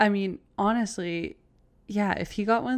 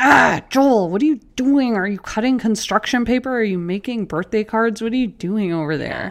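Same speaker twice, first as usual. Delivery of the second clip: mock annoyed, irritated snapping, louder; 9 dB louder than usual. Retelling own reaction to a cutting sound from the kitchen: imitating own annoyed snapping. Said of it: "I'm snapping".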